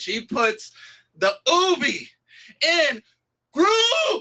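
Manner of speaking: voice cracking, very high, slow and halting. Delivering a punchline in praise of someone on the app: voice cracking. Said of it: "Ooh, my voice cracked".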